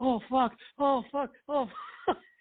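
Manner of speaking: put-on very high voice, gasping and struggling for air. Retelling a prank where a man grabbed his chest, imitating gasping for breath. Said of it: "he's trying to catch his breath".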